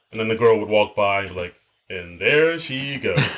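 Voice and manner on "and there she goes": slick, smooth, put-on voice. Retelling a sketch where two guys talk about girls going by: imitating a smooth put-on voice. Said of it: "this a smooth voice they were putting on".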